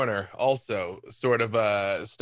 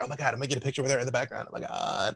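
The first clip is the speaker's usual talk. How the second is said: put-on hushed teen whisper, quieter; 4 dB quieter than usual. Voicing teenagers who spot a famous character in a store: teenagers whispering. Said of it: "you hear a couple of teenagers whispering".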